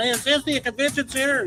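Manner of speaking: loud, high-pitched yelling. Retelling Jim Cornette pulling up in a rental car: imitating Jim Cornette yelling. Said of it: "Jim Cornette pulls up in a rental car and yells out".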